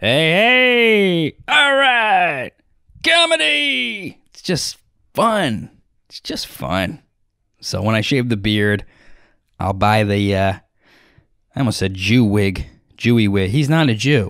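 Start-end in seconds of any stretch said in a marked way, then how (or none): 0.0-4.2 put-on very high old-time radio announcer voice. Imitating another comedian's voice: 1950s radio voice impression. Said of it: "one of those voices".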